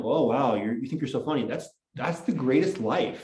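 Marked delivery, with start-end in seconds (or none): 0.0-1.5 put-on, mocking, teasing. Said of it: "make fun of that in a sitcom".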